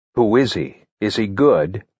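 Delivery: plain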